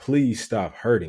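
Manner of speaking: ordinary talk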